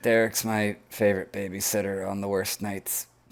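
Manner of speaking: hushed, voiceless half-whisper. Playing a character telling a companion about derek: half-whispering. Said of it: "whisper over to Dan".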